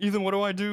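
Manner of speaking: panicked voice.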